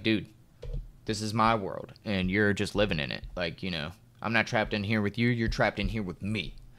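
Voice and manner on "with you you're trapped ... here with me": ordinary talk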